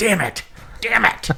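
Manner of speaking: rough, drawn-out high curse. Joking about a convention lead answering the phone: Jack Bauer impression. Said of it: "he answers the phone just going".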